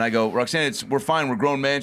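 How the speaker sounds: ordinary delivery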